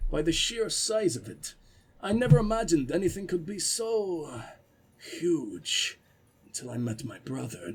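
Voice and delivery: put-on big, deep voice with Russian accent. Telling a story in character, in a deep Russian accent. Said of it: "big, deep Russian".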